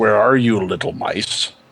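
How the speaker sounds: deep rumbling monster voice. The game master voices a figure the players hear searching for them, in a rumbling voice. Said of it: "You hear in a rumbling voice".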